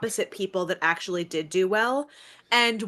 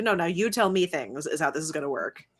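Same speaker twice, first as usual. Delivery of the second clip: mock, flat, deadpan delivery; 3 semitones lower than usual. Retelling a woman's reply to a crazy plan, imitating a deadpan reply. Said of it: "She just kind of like deadpan was like".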